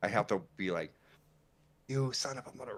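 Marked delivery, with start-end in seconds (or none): 1.9-2.7 put-on muttered curse under breath, pitched higher. Retelling cussing at a game while his wife sleeps: imitating cussing under breath. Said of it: "cussing under my breath".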